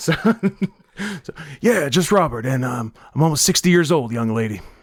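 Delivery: put-on heavy, thick New Jersey accent, laid on strongly. Answering the interviewer's question about his name, in a thick jersey accent. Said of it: "by thick Jersey accent, I assume she means [name]".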